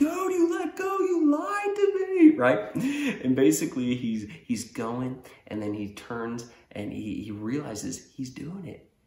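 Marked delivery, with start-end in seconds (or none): 0.0-2.4 play-acted, very high, shrill, raised yell. Retelling how a rider yelled at his older brother: imitating someone yelling. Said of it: "he starts yelling".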